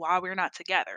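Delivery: plain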